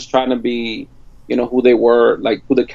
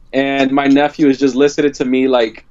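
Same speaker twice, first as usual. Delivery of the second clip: normal talking voice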